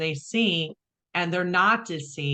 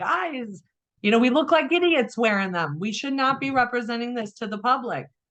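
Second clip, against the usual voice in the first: high-pitched, half-yelled, mild yell; 5 semitones higher than usual. Recalling arguing with colleagues in the profession, retelling own screaming. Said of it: "And I'm just screaming like".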